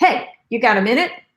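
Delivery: blunt, bossy, harsh and demanding tone. Showing how not to ask someone if they have a minute: demanding tone. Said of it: "You're not like".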